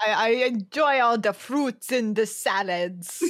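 put-on Russian accent. Acting out a man from Brazil answering a question, in a fake Russian accent. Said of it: "a Russian accent".

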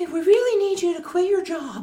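very high, shrill, loud yelling. Mocking the voice of someone you dislike, Gary Vee screaming like Mickey Mouse. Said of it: "he sounds like Mickey Mouse, and he's like screaming at you".

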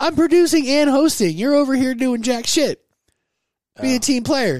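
shrill, very high-pitched, full-on yelling. Answering why the chats were not checked earlier: yelling. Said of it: "Why are you yelling at me?".

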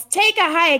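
mock shout kept small, light and half-voiced. Retelling to a friend what a guy yelled, retelling a yell. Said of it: "he yells".

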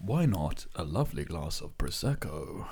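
low radio ad announcer read. Joking that this could be an advert, the speaker does their radio advert voice. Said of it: "That's my radio advert voice".

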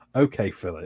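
put-on disappointed tone. Retelling a doctor's reply to your remark, imitating a disappointed voice. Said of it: "It was like very disappointed voice".

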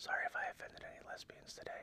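very quiet, breathy whisper under the breath. Retelling a nightly bedtime line with eyes closed: imitating own whisper. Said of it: "and I whisper".

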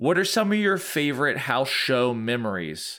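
ordinary delivery

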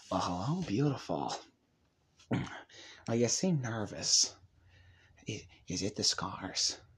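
breathy, half-whispered villain voice. Quoting The Dark Knight: Heath Ledger's Joker impression. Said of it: "Heath Ledger's Joker".

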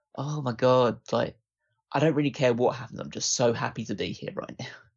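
put-on gushing, grateful voice. Mocking a wrestler's entrance look, imitating Ronda Rousey gushing. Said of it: "you just look like".

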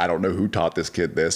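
usual speaking voice

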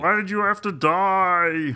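very slow, high, loud, drawn-out sitcom voice. Reacting to news of an actress's death: Raymond impression. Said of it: "I sound like the guy from Venture Brothers and less like Raymond".

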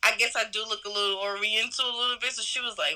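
usual speaking voice

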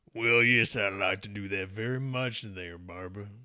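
put-on Southern-sounding accent. A newly introduced family member answers Barbara, in a Southern Jim voice. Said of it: "He sounds a little bit like Southern Jim".

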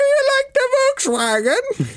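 very high-pitched leprechaun voice. Asked to redo the little impression just done, saying a line: Lucky Charms leprechaun voice. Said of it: "In Lucky Charms".

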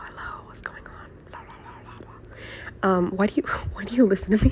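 quiet whispering. Talking to the listeners of their little community, whispering. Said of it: "I'm whispering in your ears right now".

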